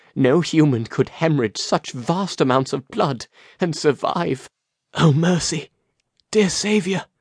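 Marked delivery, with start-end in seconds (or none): 5.0-7.0 soft, hushed, pitched-up half-whisper under breath. A nun realizing no one could survive such bleeding, half-whispered. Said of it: "She whispered".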